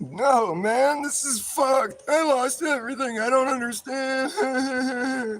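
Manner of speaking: crying lament, very high, very slow, drawn-out sobbing. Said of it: "And he's crying".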